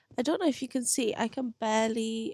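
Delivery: ordinary delivery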